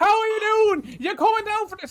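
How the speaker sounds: very high-pitched, loud, shrill yelling. Describing a sister who yells even from two feet away, imitating the sister yelling. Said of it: "she's yelling".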